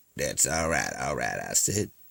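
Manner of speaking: very low, hushed, gritty, put-on Southern drawl. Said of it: "this corn fried grit voice".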